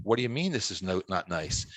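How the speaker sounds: hushed stage whisper. Retelling her reaction on walking into the house: imitating a stage whisper. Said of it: "she turns in a stage whisper and says".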